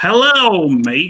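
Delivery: Australian accent spoken with a lisp. Showing the Australian accent with a lisp that was just asked about. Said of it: "Australian ac- accent with a lisp".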